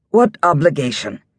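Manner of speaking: sharp, cutting, pointed, demanding tone. A man cuts into his brother's explanation, asking sharply. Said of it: "Theron asked sharply".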